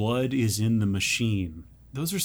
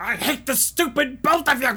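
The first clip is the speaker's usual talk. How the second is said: put-on scream, higher pitch; 13 semitones higher, 3 dB louder than usual. Retelling a character screaming in the living room: imitating someone screaming. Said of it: "he's screaming in the living room".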